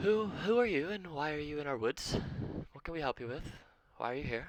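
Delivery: very high-pitched loud call heard from afar. A dryad questions strangers in her woods: calling out from afar. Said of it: "this dryad from afar calls out".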